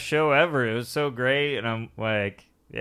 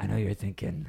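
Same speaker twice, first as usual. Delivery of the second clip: gravelly put-on tough-guy voice, lower and quieter; 5 semitones lower, 6 dB quieter than usual. Trying out a voice after being asked how Clint Eastwood sounds: Clint Eastwood voice. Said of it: "recent Clint Eastwood".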